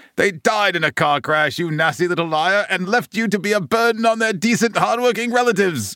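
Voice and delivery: very high, shrill, raging, furious scream. Narrator reads Aunt Marge's line to Harry, furious screaming. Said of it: "screamed Aunt Marge, swelling with fury".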